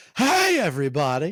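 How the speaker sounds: high, loud sportscaster call. Speaker reminiscing about a baseball announcer, doing a Harry Caray impression. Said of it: "Harry Carey was the jam, and it's like".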